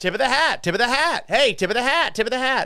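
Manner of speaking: rapid-fire auctioneer patter, very high-pitched. Playing one of those TikTok NPC people, rapid-fire auctioneer talk. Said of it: "rapid fire talk like an auctioneer".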